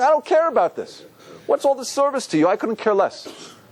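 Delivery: high, dismissive scorn. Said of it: "He's making a statement".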